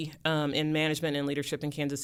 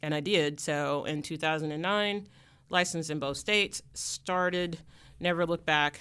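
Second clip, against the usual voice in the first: plain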